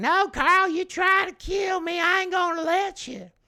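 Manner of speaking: very high, shrill yell. Retelling a childhood memory of grandmother answering grandfather: imitating Altamay shouting back. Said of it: "My grandmother shouting back".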